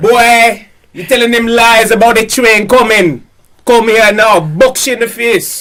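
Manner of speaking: put-on Jamaican accent. Continuing the scene after the host asks for an accent, jamaican accent. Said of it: "Continue this in a Jamaican accent".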